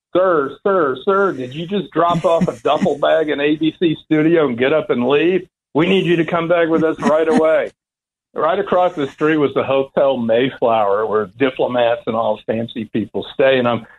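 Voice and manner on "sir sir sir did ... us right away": mild, held-back, pitched-up shout. Retelling two cops confronting over a left duffel bag: imitating cops screaming. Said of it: "They're screaming at me".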